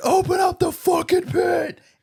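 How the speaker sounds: mock very high, stretched-out, drawn-out stage scream. Retelling how someone on stage early in the morning was screaming: imitating a man screaming. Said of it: "some dude is on stage screaming".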